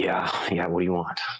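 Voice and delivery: annoyed voice, through gritted teeth. Voicing a focused cook as someone steps in: through gritted teeth. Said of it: "with his teeth gritted, be like".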